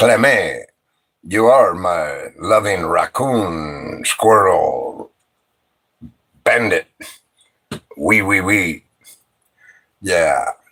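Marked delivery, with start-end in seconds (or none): 0.0-8.8 put-on, laid-on cartoonish French accent. Imagining Pepe Le Pew writing about Clammy: Pepe Le Pew French accent. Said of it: "write a book about Clammy in a French tone".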